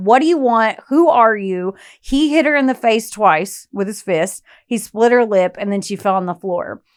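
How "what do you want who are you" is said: acted-out scream. Retelling an attack on a woman, the speaker acts out her words: retelling a scream. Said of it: "she's screaming at him".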